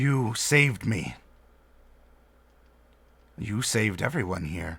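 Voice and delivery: big, silky-smooth, soft voice. Narrating a story, the speaker voices her line in a larger, silky smooth voice. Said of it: "she says in a larger but still kind of silky smooth voice".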